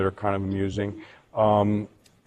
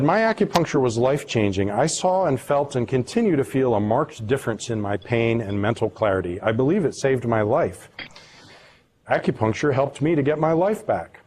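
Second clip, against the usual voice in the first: normal talking voice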